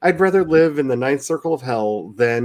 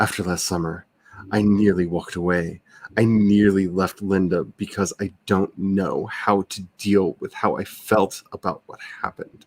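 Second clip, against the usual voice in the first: overdramatic voice, much lower pitch; 5 semitones lower, 3 dB quieter than usual. Host reading a passage aloud for listeners, dramatic voice. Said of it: "Let's go into dramatic voice".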